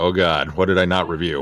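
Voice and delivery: put-on panicked voice. Retelling a moment of worry about missing a review: imitating own past panic. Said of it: "I started to panic just a little bit".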